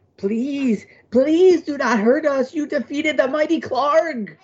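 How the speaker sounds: squeaky, very high, pleading goblin voice. Game master voicing two defeated goblins on their knees, begging for their life. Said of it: "The two goblins drop to their knees and beg for their life".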